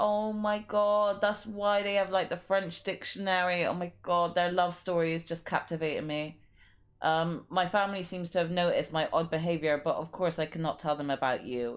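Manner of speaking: ordinary talk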